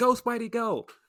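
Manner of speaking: high, loud, excited cheering yell. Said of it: "then she yells".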